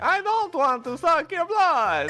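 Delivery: vampire character voice. A player voicing Mario as the voice keeps drifting; Mario voice drifting into vampire. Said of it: "That's where this voice is going".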